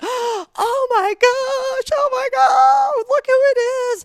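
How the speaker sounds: very high, very loud playacted frightened scream. Greeting a small kid in a Jason mask, pretend-scared scream. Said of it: "I pretend to be all scared".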